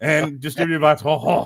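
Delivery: thick, full put-on French accent. Reading out a film's production credits: full French accent. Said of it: "I'm just going full French now".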